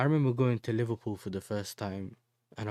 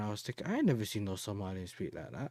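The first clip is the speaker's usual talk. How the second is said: ordinary delivery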